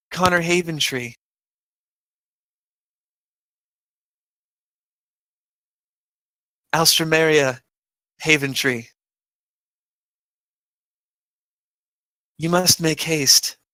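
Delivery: soft, quiet voice. A flaming entity looks about the room at the astonished onlookers, in a quiet voice. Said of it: "in a quiet voice says".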